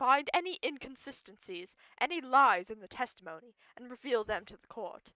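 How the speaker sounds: put-on aggressively heavy English accent. Speaker asks the group to help find lies in the testimony; aggressively english accent. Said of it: "it's aggressively English".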